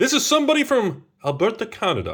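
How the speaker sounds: put-on Canadian accent, pitched very high. Speaker introducing somebody from Alberta in a put-on Canadian accent. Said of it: "I don't know why I did the accent".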